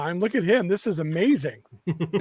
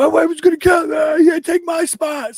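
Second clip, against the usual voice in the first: very high, loud yell; 10 semitones higher, 8 dB louder than usual. Retelling what someone pulling out in a truck called: imitating someone yelling. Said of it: "sees us in the van and yells".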